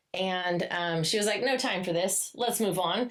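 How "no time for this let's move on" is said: ordinary talk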